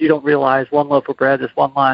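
ordinary talk

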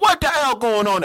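poor put-on Jamaican accent, very high and fast. Retelling a cab driver picking up the group, in a bad jamaican accent. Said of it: "I don't have a good fucking Jamaican accent".

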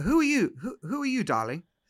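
attempted, put-on English accent. Retelling a man who stopped and looked at the speaker, in an English accent. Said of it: "with an English accent, I'm going to try to do an English accent here".

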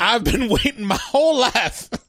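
demanding, entitled voice. Acting out an imagined middle-aged Karen who waddles over: put-on Karen voice. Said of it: "Kinda just waddling over and it's like".

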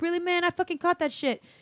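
put-on acted-out pissed-off kid voice. Retelling how the kid who caught the fish complained: imitating an angry kid. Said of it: "the kid who caught it was pissed off".

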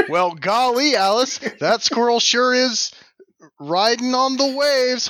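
high-pitched TV news anchor delivery. Riffing on a squirrel puff piece idea, in a newscaster voice. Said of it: "you sound like a newscaster".

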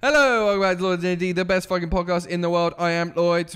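put-on mechanical, robotic voice. Podcast host introducing himself on the show in a robotic voice. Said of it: "That was my robot voice".

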